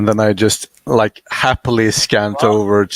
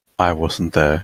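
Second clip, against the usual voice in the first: muttering quietly, lower and quieter; 5 semitones lower, 4 dB quieter than usual. Reacting in character to a giant explosion: muttered under breath. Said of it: "under my breath".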